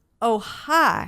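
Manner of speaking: put-on casual American Southern accent. Retelling greeting Ted outside the men's room: imitating Ted's Southern accent. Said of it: "in his Southern accent".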